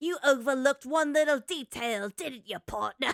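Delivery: cheap, trashy-sounding put-on British accent. Retelling a shadow puppet scene in a game story: trashy British accent. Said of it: "uses a trashy British accent".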